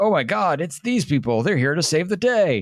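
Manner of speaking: breaking-news announcer voice. Describing how heroes showing up would be announced, in announcer voice. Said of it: "like you have like announcer voice being like".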